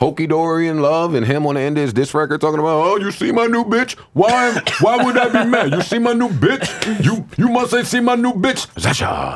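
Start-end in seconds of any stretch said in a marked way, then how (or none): 2.8-9.4 clumsy, very high put-on West Indian accent. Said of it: "That was the worst Wes Indian impression I've ever heard".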